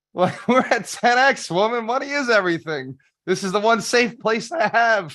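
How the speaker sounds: high, loud, mock outraged rant.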